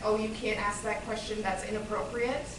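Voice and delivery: ordinary talk, nothing marked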